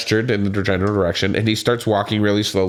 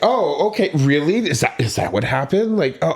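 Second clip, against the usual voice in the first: put-on passive-aggressive, condescending, pitched-up fake sympathy; 6 semitones higher than usual. Imitating her as she ushers him out the door: mock condescending, patronizing tone. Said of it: "passive aggressive, condescending, patronizing tone".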